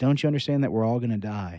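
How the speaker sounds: usual speaking voice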